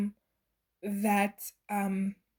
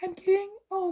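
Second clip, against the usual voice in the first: voice cracking high. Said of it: "my voice".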